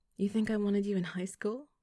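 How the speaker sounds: playful teasing voice. Replying to him, she asks teasingly. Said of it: "teasing him".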